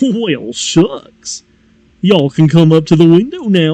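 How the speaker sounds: cartoon dog voice, sing-song. Describing how he talks to drive-through customers, Goofy voice. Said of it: "talk as Goofy in the drive-through".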